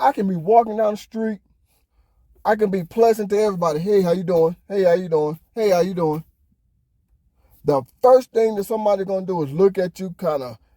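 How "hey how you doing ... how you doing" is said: ordinary talk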